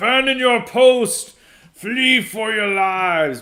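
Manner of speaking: shrill, very high, very loud, slow drawn-out cry. Doing a requested impression from Return of the King: Denethor impression. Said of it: "do [name] Denethor impression from Return of the King".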